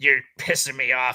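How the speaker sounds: put-on harsh, scratchy, bitter, cranky old lady voice. Imitating a notoriously hard old English teacher, in a scratchy old teacher voice. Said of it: "she was just like real scratchy voice".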